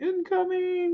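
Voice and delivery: very high-pitched, tiny cute voice. Retelling a funny landing call, imitating Bo's little voice. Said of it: "It's so cute in his little voice".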